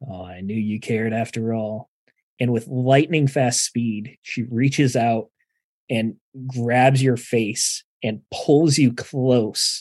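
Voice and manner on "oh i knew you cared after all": hushed, put-on mannish voice. A game narrator voices a woman suddenly coming at the players: masculine voice. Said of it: "in that masculine voice".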